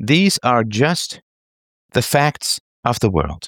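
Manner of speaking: very slow, emphatic, with these and facts stressed.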